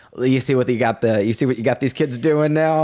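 ordinary talk

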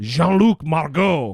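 terrible, botched, fake French accent. Naming a UCLA astronomy professor, the speaker uses a terrible French accent. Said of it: "That's a terrible French accent".

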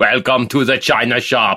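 put-on Austrian accent. Repeating the show opening in a put-on voice: Arnold Schwarzenegger voice. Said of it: "doing your Arnold Schwarzenegger impression".

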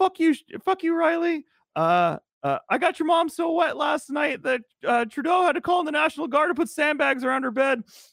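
put-on squeaky voice. Recounting a hockey character's best trash-talk one-liner; Shoresy's high squeaky voice. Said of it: "he has this really high squeaky voice".

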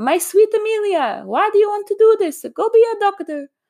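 horrible put-on Italian accent, very high pitched. Recalling what her grandmother said to her, in a horrible Italian accent. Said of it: "my horrible Italian accent".

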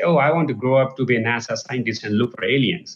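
ordinary talk, nothing marked

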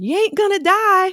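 play-acted very high shrill scream, West Virginia accent. Recalling how Meg sent everyone out onto the rink, imitating Meg screaming. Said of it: "like screaming".

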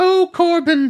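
very high, loud, doting, gushing mother voice. Retelling a tv phone call from a mother, in gushing mother talk. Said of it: "then it turns into like gushing mother talk".

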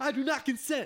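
high, loud laughing scream.

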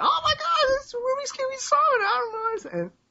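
put-on very high, excited, shrieking old lady voice.

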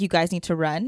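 normal talking voice

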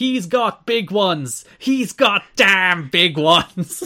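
high, very slow, drawn-out, full-throated yell. Retelling a locker room moment: imitating Mike Tenay shouting at the top of his lungs. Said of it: "shouts at the top of his lungs".

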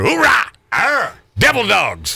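war cry, barked out high.

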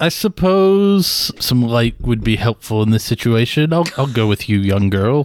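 very low, deep character voice. In an actual-play game, a character agrees to go with a young girl: old business acquaintance voice. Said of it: "[name] and I are old business acquaintances, I guess you would say. / Listen to the man".

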